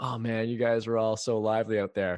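loud, play-acted sarcastic, insincere tone. Retelling a joke from the end of a music video: imitating a sarcastic remark. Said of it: "he has this sarcastic thing".

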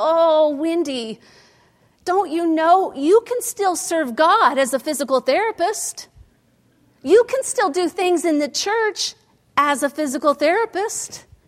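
acted, high, sad, begging, pleading voice. Recalling her grandmother's reaction to her news, imitating grandma's pleading, sad voice. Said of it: "I just heard her pleading, sad voice".

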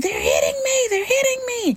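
put-on very high, swooping, rising child's scream. Retelling her daughter stuck in a bounce house, imitating her screaming. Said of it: "sitting there and screaming".

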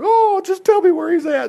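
put-on very high, weeping, crying voice. Retelling the tomb scene from scripture: imitating Mary crying. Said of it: "She was crying".

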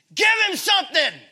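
piercing, very high scream at full volume. Recalling sitting with him during chemo, retelling screaming at the nurse. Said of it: "I'm screaming at the nurse".

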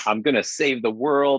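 normal talking voice

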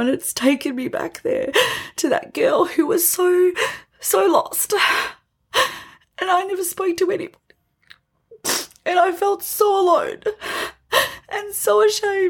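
tearful, weeping. Remembering a time she felt lost and alone, speaking to listeners: crying. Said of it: "And I'm crying".

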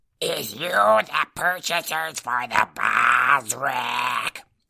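grating voice like broken glass caught in throat. Reading the story, the narrator voices the creature addressing three shaded figures, voice like broken glass. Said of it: "Its voice sounded like broken glass was caught in its throat".

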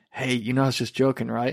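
whispered, hushed delivery. Retelling what a coworker said in the hallway: imitating a whisper. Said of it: "kinda whispered as we're walking down the hallway".

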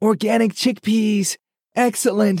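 very high-pitched, shrill holler. Holding a can as the girls turn into the aisle, he hollers. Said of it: "Hashim hollered".

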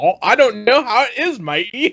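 terrible put-on Scottish accent, very high-pitched. Speaker retells a woman on a show asked for an accent, atrocious Scottish accent. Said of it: "pulls off this atrocious Scottish accent".

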